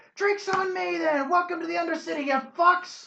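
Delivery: shrill, very high, loud shouting. Game narrator voices a random elf standing up in a bar; shouting. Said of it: "a random elf just stands up and shouts".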